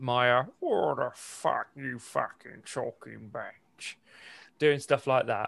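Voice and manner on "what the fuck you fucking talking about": gritty, cracked, rough, creaky movie-star delivery. Showing the others a Tom Hardy impression. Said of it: "I was doing my Tom Hardy impression".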